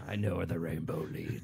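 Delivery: very low, deep, creaky, rough, menacing voice. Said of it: "It's actually a really good impression".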